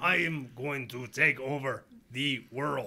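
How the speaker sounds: slow, mechanical, robotic villain voice. Describing a villain known for beating heroes, in a robotic MODOK voice. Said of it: "I'm trying to do a robotic voice".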